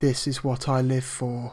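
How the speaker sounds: acted flat, emotionless voice. Retelling what a game companion says after the last enemy falls, imitating Selena's flat monotone. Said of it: "in the most monotone voice possible".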